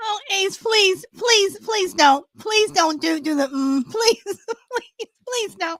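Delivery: high pleading voice, breaking into laughter. Host who can't stop laughing on the show, begging ace not to, pleading through laughter. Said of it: "I can't stop laughing".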